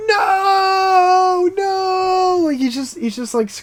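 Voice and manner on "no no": mock, very high, shrill, drawn-out, over-the-top wailing scream. Retelling the prankster guy after his mic is thrown in the ocean; imitating an exaggerated scream. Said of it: "doing this exaggerated scream where he's like".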